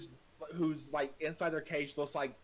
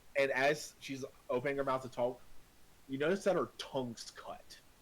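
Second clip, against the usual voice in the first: usual speaking voice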